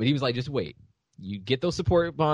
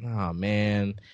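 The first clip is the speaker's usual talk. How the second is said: meek, sad, apologetic little lament; 5 semitones lower, 4 dB quieter than usual. Retelling how Ignatz usually sounds: imitating sad, meek Ignatz. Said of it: "He's always, like, real sad and, like".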